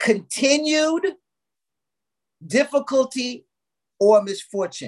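very slow, deliberate delivery. Giving listeners a definition they were told to write down: very slow. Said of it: "I'm gonna say this very slow".

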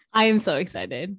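not sounding excited. Podcast co-host, told she doesn't sound excited, insists she is: flat, unexcited delivery. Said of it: "I know it doesn't sound like it".

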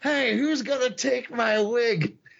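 very high, stretched-out, put-on shout. Retelling how a wrestler called for someone to take his wig: imitating a yell. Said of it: "and he yells".

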